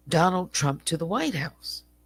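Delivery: ordinary talk, nothing marked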